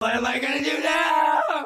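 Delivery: horror voice cranked way up high and loud. Performing the line again after being asked: Evil Dead voice. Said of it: "Do the Evil Dead one again".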